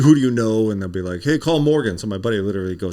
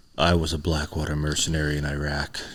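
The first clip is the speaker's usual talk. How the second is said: very deep, slow voice at bottom of range; 5 semitones lower, 6 dB quieter than usual. Showing how the author's introduction line should sound: deep voice. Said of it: "Get real deep".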